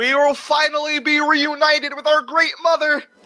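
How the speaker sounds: very high, put-on frog character voice. Voicing a frogman wizard speaking to a crowd: Kermit voice. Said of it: "And I'm doing a Kermit voice".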